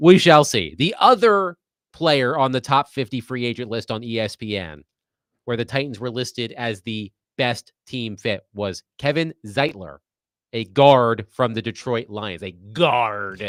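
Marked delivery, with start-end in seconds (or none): 12.4-13.5 mock pirate voice, lower. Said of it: "You have to say it like you're a pirate".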